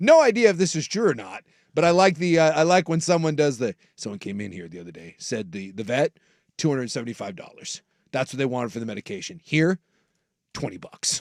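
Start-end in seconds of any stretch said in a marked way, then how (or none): 4.0-11.2 very low, hushed, confiding secretive undertone. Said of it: "We used the low voice".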